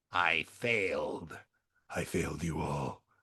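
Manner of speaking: very deep, very slow, drawn-out hero voice. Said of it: "I gotta do my Batman voice".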